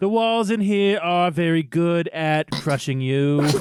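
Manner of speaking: put-on Boston politician voice. Voicing the villain threatening a trapped enemy: JFK voice. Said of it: "I turned J F K there for a second".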